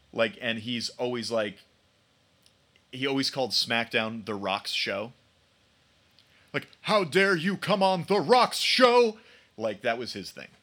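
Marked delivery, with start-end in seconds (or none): 6.9-9.2 loud, high, cocky, puffed-up taunting tone. Retelling a wrestler's catchphrase about his own show: The Rock impression. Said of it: "a solid Rock impression".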